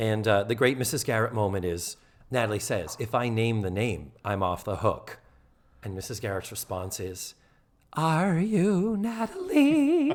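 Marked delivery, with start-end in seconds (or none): 7.9-10.1 squeaky, very high voice. Retelling a scene, give Mrs. Garrett's response to Natalie: squeaky Mrs. Garrett impression. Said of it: "My voice is squeaky".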